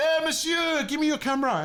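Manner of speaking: very high-pitched shouted yell. Retelling how she yelled out after the selfie: imitating someone yelling. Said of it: "she yells out".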